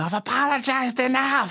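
very high, totally unhinged, flipping-out scream. Retelling how a woman who interviewed herself started screaming, retelling her screaming. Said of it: "She just starts screaming".

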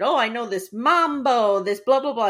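eager, bubbly, all-excited pitch. Recapping a show, the speaker quotes Johnny all excited. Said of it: "Johnny's like all excited".

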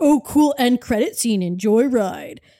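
taunting, mocking voice. Retelling a theater employee mocking the speaker's group, retelling a mocking voice. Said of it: "he says in a mocking voice".

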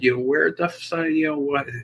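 high broken-off acted yelling. Retelling a moment of yelling at the director after an injury: retelling own yell. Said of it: "And then I yelled at the director".

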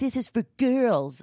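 put-on indignant little boy voice. Retelling a child's complaint about a pink cup: imitating an angry child.

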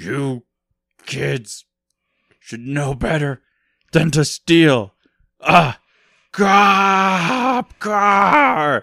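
put-on loud, very slow rising yell, "cop" stretched out. Retelling a movie scene where a character yells over the radio: imitating Kevin Bacon yelling. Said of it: "He's yelling at them".

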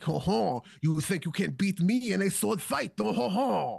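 put-on prissy aristocrat voice, French accent, high and slow. Retelling a film character's taunt before a sword fight: prissy French duke voice. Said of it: "a really fucking prissy French duke".

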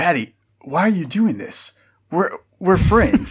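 shocked, stunned, caught-off-guard disbelief. Voicing a character who looks at Patty after an attack: shocked.

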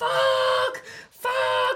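acted very high, shrill, frantic shriek. Retelling a phone call with her after a wrong turning, retelling screaming down the phone. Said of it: "I'm screaming down the phone to her going".

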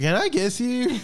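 put-on very high, slow, drunken-sounding voice. Retelling how drunk Bradford came up to Josh: imitating drunk Bradford. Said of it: "drunk Bradford, or as I like to call him, Drunkford".

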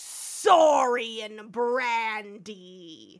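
very loud demon growl, "brandy" drawn out. Retelling how evil Kirk walks in: imitating a demonic voice. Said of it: "he comes in like a demon and just goes".

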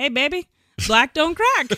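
put-on Southern accent, high and loud. Retelling what a very Southern man said to her, imitating a Southern accent. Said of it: "Very, very Southern".

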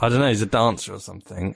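irritated, annoyed tone. Asked about a man who comes up before him on YouTube, the speaker answers, annoyed. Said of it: "You are annoyed at him".

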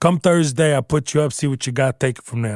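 put-on Italian accent. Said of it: "go into Italian accent".

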